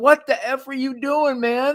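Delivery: put-on very high, shrill, loud screaming. Retelling what Angelo said about yelling at Ali: imitating Angelo screaming. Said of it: "I'm screaming at him going".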